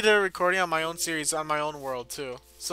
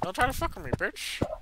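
breathy, whispered put-on character voice; 3 semitones higher, 6 dB quieter than usual. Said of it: "He's upgraded him".

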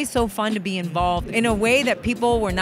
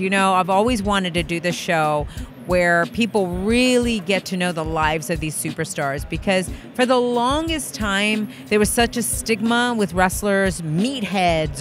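usual speaking voice

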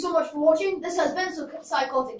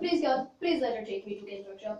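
low, hushed put-on Indian accent; 7 semitones lower, 8 dB quieter than usual. Acting out a girl's prayer while joking about religion; Indian accent. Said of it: "I have an Indian accent there".

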